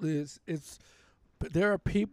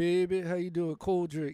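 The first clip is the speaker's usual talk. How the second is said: put-on New Orleans accent. Asked if they can do the accent, the speaker shows a New Orleans accent. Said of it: "I could do New Orleans accent".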